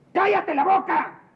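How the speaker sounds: shouting. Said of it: "Me gritaste".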